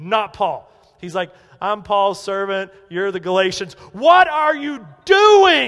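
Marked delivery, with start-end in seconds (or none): 1.6-5.7 put-on righteous anger, much louder. Speaker acting out Paul rebuking the Galatians: Paul's angry rebuke, acted out. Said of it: "he's angry at the threat".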